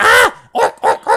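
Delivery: loud, slow, very drawn-out, quavering, trembling voice. Narrator voicing figures who grab their weapons again and point them: trembling voice. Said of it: "they're trembling again".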